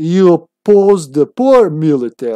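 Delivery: put-on robot voice, Slavic accent. Gamer voicing a robot character in the game's dialogue, doing a Slavic robot voice. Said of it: "It's hard doing the Slavic robot".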